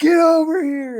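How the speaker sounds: put-on, very high, loud shouted call. Retelling calling dad over to the feeding fish: imitating own yell. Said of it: "I was yelling at my dad".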